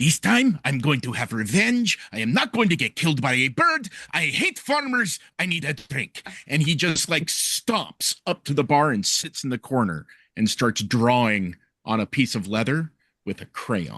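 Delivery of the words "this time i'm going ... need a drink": furious, growling frog-creature monster voice. Narrating a frog-like creature stomping in, sharpening daggers: angry grung creature voice. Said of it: "walking in, sharpening his daggers, just going".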